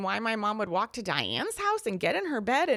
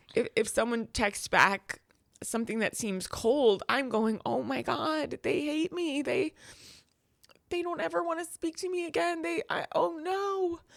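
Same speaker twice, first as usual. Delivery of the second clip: crying, tearful, halting voice that breaks; 4 semitones higher than usual. Continuing to speak after apologizing for crying, crying while talking. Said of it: "I'm so sorry, I'm crying".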